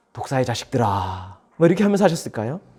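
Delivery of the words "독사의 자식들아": very low, soft, mild and gentle voice. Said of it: "온화한 얼굴로 웃으면서 중저음의 부드러운 목소리로 이렇게".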